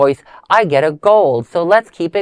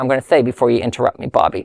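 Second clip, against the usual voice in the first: usual speaking voice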